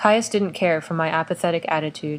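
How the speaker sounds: plain reading voice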